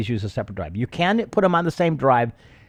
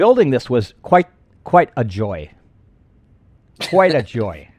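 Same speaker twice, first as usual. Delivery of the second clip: raised, dry sarcasm, not meant at all; 5 dB louder than usual. Describing how building the setup went: sarcastic. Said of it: "I sense some sarcasm in that".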